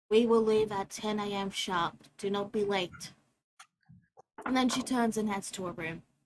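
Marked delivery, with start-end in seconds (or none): 0.1-3.1 completely flat, level, expressionless monotone. Reading a story aloud, the narrator voices a character who turns to everyone, in complete monotone. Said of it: "says in a complete monotone".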